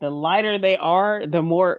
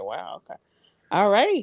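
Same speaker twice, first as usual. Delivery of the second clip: startled, caught off guard, swooping pitch; 3 semitones higher than usual. Retelling a reaction to a tense text: imitating own taken-aback reaction. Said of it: "and I'm just like".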